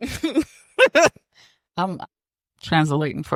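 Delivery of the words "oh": very high, panicky dog voice crying out. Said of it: "the dogs are like".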